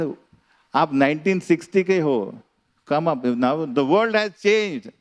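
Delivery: cross, angry, scolding tone. Retelling how she argued with her grandfather about her clothes: imitating an angry girl. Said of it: "she became very angry".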